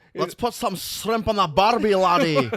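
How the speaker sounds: put-on Scottish accent with Australian twang. Imagining how a Scotland-born wrestler raised in Australia sounds: Bill Dundee's Scottish-Australian accent. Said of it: "That would be the accent".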